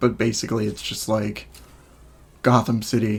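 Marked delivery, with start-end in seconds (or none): 2.4-3.2 flat, stiff, mechanical, lifeless robotic monotone. Mimicking a man's delivery from a clip: imitating a robotic delivery. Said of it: "he sounds really robotic ... Like that's his delivery".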